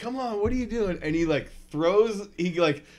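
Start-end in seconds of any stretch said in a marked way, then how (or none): 0.0-1.0 put-on high-pitched, urging yell. Retelling yelling at someone pulling a sled: imitating own past yelling. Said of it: "I'm yelling at him".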